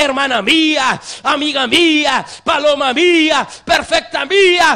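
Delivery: play-acted sweet-talking, coaxing, flattering, pressing and urgent. A preacher voices God calling out to the beloved, acting out a coaxing, urgent call. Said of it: "con esa voz de halago, con esa voz de urgencia".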